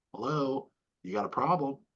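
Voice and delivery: ordinary delivery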